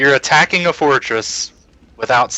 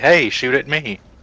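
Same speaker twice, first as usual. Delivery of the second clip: ordinary talk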